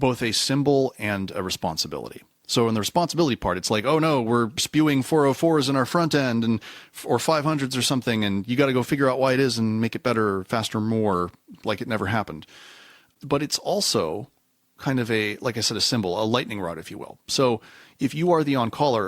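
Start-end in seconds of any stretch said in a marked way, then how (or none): none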